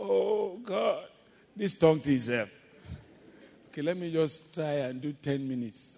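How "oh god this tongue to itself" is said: high, loud talking, words stretched by a yawn. Speaker acts out getting bored while praying, imitating a yawn. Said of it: "I'm yawning like this".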